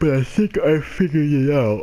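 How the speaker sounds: loud, high words pushed through a yawn. Video maker explaining the game situation to viewers, yawning. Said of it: "sorry, I'm yawning".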